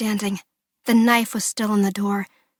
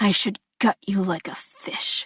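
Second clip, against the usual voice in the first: raspy, rasping, menacing threatening tone. Reading a story aloud, the attacker threatening: rasping. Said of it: "he rasped".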